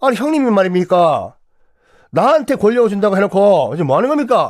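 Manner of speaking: put-on Gyeongsang accent outburst. Acting out the passed-over heir complaining to his elder brother, in Gyeongsang dialect. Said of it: "갑자기 경상도 사투리가 왜 여기서".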